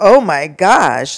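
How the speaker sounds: appalled, shocked, horrified exclamation. Retelling how a man reacted on hearing her name, imitating a horrified voice. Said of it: "like he was horrified".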